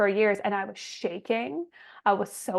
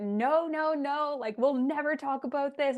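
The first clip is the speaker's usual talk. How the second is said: play-acted, overwrought, high-pitched, frantic and furious; 5 semitones higher than usual. Retelling how a woman refused to have a conversation, imitating her screaming. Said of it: "She's screaming".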